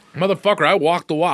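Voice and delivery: talking with mouth full. Answering another speaker's remark about eating gummies while chewing while talking. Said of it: "I'm eating gummies".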